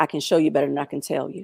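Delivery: put-on cool, flat delivery. Quoting a phrase someone used to say, imitating Emma Means's cool warning. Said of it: "like just cool".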